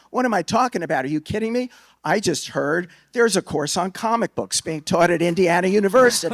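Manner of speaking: play-acted, loud, high angry screamed rant. Retelling a phone call to a reporter: retelling own past screaming. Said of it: "I started screaming at him".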